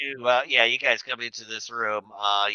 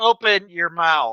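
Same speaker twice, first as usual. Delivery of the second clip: loud, high, barked shouting; 7 semitones higher, 6 dB louder than usual. Voicing a security guard with a phaser trained on the players: shouting an order. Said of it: "and he shouts".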